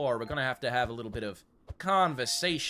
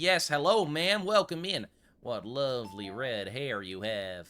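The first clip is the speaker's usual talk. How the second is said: fake, put-on Old West cowboy accent. Playing the owner of the old gun shop, greeting a customer in a put-on accent. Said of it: "the creepiest thing I've ever said in this accent".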